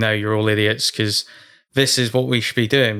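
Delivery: ordinary delivery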